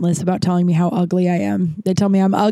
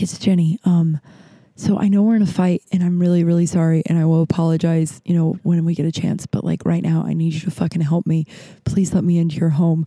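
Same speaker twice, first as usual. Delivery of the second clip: mock whispering.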